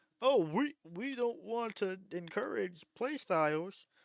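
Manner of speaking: mock, derisive parroting tone, high-pitched and slow. Quoting what they say in order to mock it: mocking imitation. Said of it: "what I'm mocking right now".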